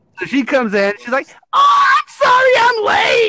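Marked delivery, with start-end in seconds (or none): 1.5-3.3 very high, very slow, shrill, grating, drawn-out voice. Retelling the supervisor barging in late: imitating a grating nails-on-chalkboard voice. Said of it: "the most nails on a chalkboard fucking voice".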